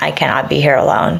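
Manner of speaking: play-acted, tearful speech pushed out through sobs. Retelling a call to John: imitating own sobbing.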